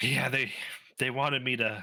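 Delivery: out of breath, bruised-sounding voice. Voicing a battered, bruised character leaning on a crate: heavy breath, battered NPC. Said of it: "a heavy breath".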